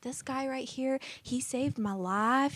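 put-on light Southern accent. Retelling a caller's nine one one call: imitating a Southern accent. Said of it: "a little accent, a Southern accent".

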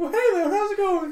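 high, loud, squeaky voice. Introducing himself at the start of a podcast episode, in a Mickey Mouse impression. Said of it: "introducing themselves in their very best Mickey Mouse impressions".

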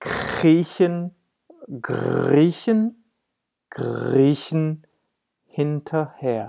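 slow with pauses between words.

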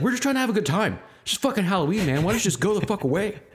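mock, very high, fed-up, pissed-off outburst. Retelling what a man dressed as a scarecrow said, acting out a pissed-off man. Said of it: "he's all pissed off".

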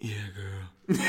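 forced deep voice, very low and soft. Showing how the voice sounds when pushed down low: forced deep voice. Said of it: "that hurts to get down".

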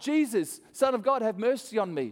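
put-on high, yelled-out calling voice. Retelling the blind man calling out to jesus: imitating a yell. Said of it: "he yells out".

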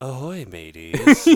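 very loud, unruffled on-air radio voice. Speaker retells a woman's catchphrase after a call: imitating a cool, composed delivery. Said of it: "back to cool, composed ahoy, mateys".

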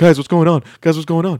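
high, sad, forlorn voice, called out. Retelling what an intern filming on a phone says: imitating a sad intern cameraman. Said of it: "like, sad, like, there's, like, this twenty-something-year-old intern".

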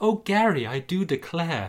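giggling cheerleader voice with sigh, high, slow. Narrating a story, the rival's cheerleaders speak, giggly cheerleader voice. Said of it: "giggle his squad of sexy cheerleaders".

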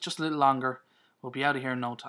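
ordinary delivery

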